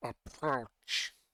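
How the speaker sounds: low, deep, half-gurgled creature voice. Narrating to players surrounded by blowgun holders, a figure speaks: deep, gurgling voice. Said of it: "deep, almost gurgling voice".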